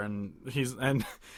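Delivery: ordinary delivery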